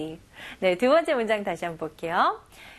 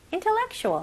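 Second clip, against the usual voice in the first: the word intellectual said quickly and higher-pitched. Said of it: "좀 더 빨리 intellectual".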